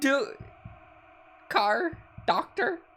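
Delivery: very high, broken, scared rasp, terrified. Trying to speak while hurt and terrified: terrified, rasping broken words.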